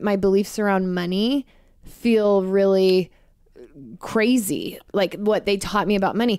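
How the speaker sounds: normal talking voice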